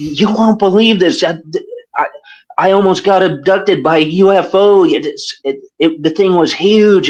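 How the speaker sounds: acted, frantic, stammering, high-pitched panicked voice. Retelling a mother's phone call at four in the morning: imitating a panicked mother. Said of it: "She was panicking".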